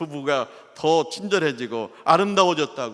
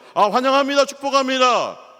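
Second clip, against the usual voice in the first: very high, loud, fervent voice; 9 semitones higher, 6 dB louder than usual. The speaker shows the deaconesses how to greet fervently, with a loud, fervent greeting. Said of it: "볼륨을 높여야 돼요".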